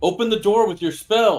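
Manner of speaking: worked-up, very high-pitched, loud, agitated voice. Urging another player to open the door with a spell: agitated urging. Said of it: "calm down".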